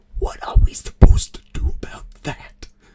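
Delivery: muttered, breathy, audible whisper under the breath. Voicing a character who gulps and backs away: whispering under his breath. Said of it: "would kind of whisper, like, under his breath".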